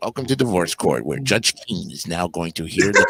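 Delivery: deep, very low TV announcer delivery. Imitating a game show announcer's Divorce Court opening: Jim Peck's low announcer voice. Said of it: "Trying to keep that low voice".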